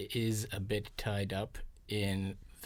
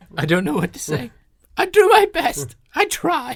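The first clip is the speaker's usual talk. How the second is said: very high, very loud, shrill blubbering tearful wail; 19 dB louder than usual. In a skit, an employee scolded by the boss for poor work answers, crying. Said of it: "Are you crying".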